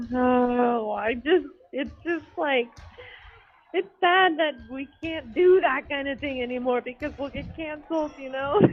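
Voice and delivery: sad, tearful, close to crying, drawn-out oh. Others tell him not to cry, and he answers: sounding tearful. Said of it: "Paul, don't cry".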